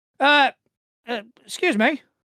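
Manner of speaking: high, loud calling out. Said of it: "you just hear a voice go".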